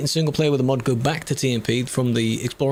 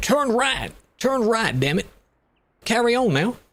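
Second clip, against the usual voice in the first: put-on cranky, annoyed American old grandma voice, pitched up; 8 semitones higher than usual. Describing a navigation voice option, imitating an annoyed old American grandma. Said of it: "sounds like an old American grandma and she's a bit uh, pissed".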